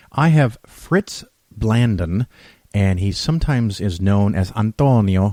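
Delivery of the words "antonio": antonio pronounced with an Italian accent. Introducing a guest's other name, with an Italian accent on 'Antonio'. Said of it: "I said that with an Italian accent".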